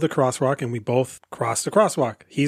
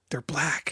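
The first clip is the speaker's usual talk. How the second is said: hushed whisper under the breath; 9 dB quieter than usual. Retelling what a neighbor said about the new buyers: imitating a whisper. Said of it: "And she whispered".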